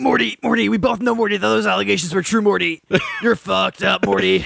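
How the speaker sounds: rough, raspy, creaky cartoon voice. Imagining Rick coming in to talk to Morty about the allegations, in a Rick Sanchez voice. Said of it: "I want Rick to come in and be like".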